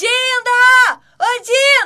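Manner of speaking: very high, loud calling shout, drawn out. Arriving, a young character calls out to her godmother in the kitchen, shouting. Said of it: "Você pode me fazer o favor de não gritar?".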